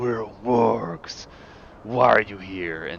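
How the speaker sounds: angry creature voice. Voicing a warg angered at the mention of wolves: angry warg voice. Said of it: "he gets angry at the mention of wolves".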